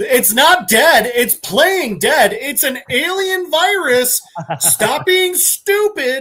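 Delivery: put-on angry shouting, loud and high. The speaker recounts screaming at the TV, retelling screaming at the TV. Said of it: "just 100% like screaming at the TV".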